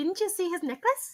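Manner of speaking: squeaky, very high put-on female character voice. Voicing a female character questioning another character, in a character voice for her. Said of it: "I'm using a character voice for her".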